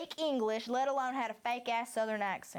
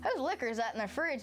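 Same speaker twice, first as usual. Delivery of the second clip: ordinary talk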